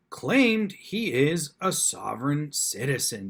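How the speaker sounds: slow news anchor reading delivery. Retelling how the newscaster opened the news clip: imitating the newscaster's delivery. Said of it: "Just the way she said it cracked me up".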